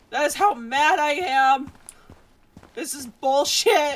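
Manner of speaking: slow delivery with cracking voice. A streamer talking to viewers, voice cracking from yelling. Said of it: "my voice keeps cracking".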